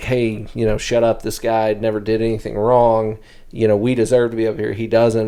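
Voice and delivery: ordinary delivery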